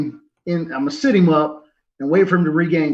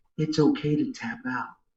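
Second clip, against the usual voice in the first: close, private, hushed whisper; 3 semitones lower, 8 dB quieter than usual. Player describing leaning down to the opponent he is choking, whispering in his ear. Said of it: "I lean down and whisper in his ear".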